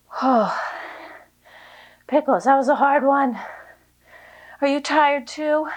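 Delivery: breathless, winded speech. Leading a workout with Pickles, pausing after a hard set, out of breath. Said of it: "I need a second to catch my breath".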